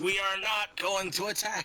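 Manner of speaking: high-pitched yelling. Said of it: "General Custer just yells".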